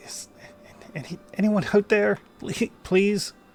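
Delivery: faint voice in distress. Narrating to a player, voicing someone heard in distress; weak distressed voice. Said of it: "Kind of like this weak voice".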